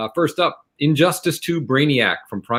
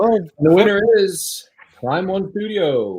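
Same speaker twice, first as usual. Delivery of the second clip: higher-pitched game show host announcer voice; 6 semitones higher than usual. Announcing an award winner on the show, speaker uses game show host voice. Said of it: "I'm really enjoying using my game show host voice tonight".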